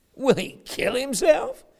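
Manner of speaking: play-acted sneering voice. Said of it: "They're saying this mocking".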